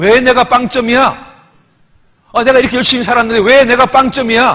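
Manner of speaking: loud, high, furious, indignant outburst. A pastor retelling how a deaconess reacted to his words, mock-angry outburst. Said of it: "갑자기 더 화를 내는 거예요".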